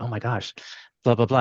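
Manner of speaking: put-on flustered, starstruck, fast, nervous gushing babble. Retelling how the boss reacted on seeing a guy: imitating Larry getting nervous. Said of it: "he started getting nervous".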